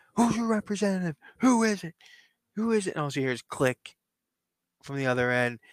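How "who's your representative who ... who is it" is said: mock shouting, high-pitched. Retelling a heated phone call about a match, retelling a yell. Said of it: "still yelling at the phone".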